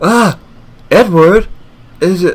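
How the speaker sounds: startled panic. Waking from a nightmare, startled by someone calling their name, startled panic. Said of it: "Calm down, [name]".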